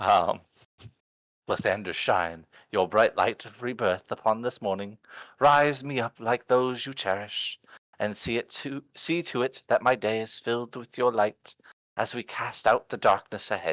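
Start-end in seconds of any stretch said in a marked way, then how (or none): 1.5-13.7 soft, quiet, gentle character voice. A dragonborn character prays aloud in the morning, soft dragonborn voice. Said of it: "as softly as a dragonborn's voice can be".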